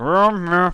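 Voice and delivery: loud, high voice speaking with mouth full. Voicing a character who answers with cornbread in his mouth: talking with mouth full. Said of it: "half a piece of cornbread in his mouth".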